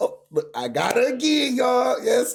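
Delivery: excited, triumphant, high, loud hollering.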